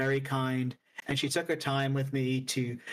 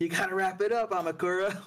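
mock, teasing, playful, lighthearted yell; 5 semitones higher than usual. Recalling Gami yelling at her after the show, imitating Gami's joking yell. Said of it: "was like yelling at her".

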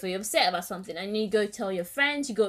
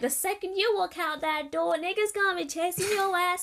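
very high-pitched put-on American girl accent; 10 semitones higher than usual. Imagining American girls giving advice, the speaker uses a put-on American accent. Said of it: "in the American accent".

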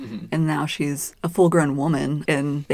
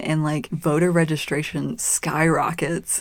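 normal talking voice

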